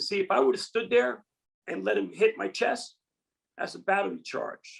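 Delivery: ordinary delivery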